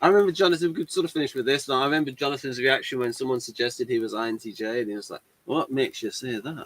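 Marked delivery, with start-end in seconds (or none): 5.4-6.7 soft, terrible, bad put-on Scottish accent. Retelling Jonathan's reaction when someone suggested he was INTJ: terrible Scottish accent. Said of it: "What was that accent?".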